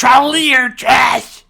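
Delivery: acted cartoon boy yelling. Rereading Cartman's insult in a group fan reading: Cartman yelling. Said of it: "Cartman yelled".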